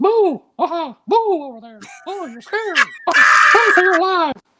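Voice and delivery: high squeaky voice, words stretched out. Asked by a host to do more voices, the speaker does a Mickey Mouse voice. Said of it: "Mickey Mouse as it goes".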